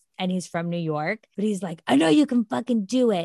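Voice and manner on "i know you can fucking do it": fake rough, gravelly voice. Imitating a fitness instructor's encouragement: raspy gruff Alex Toussaint voice. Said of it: "his voice is very raspy and it's gruff".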